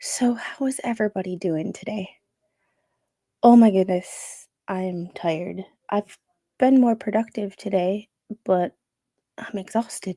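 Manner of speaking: soft, kept-down ASMR voice. Streamer greeting viewers while others in the house sleep, in a soft asmr voice. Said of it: "you get my somewhat A S M R voice".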